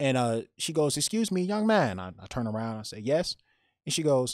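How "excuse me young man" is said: put-on very high-pitched elderly woman's Chinese accent.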